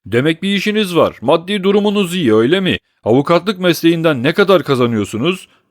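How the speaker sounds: heated, angry tone. Questioning Marius about his plans to marry, without letting him answer, angrily. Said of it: "öfkeyle ekledi".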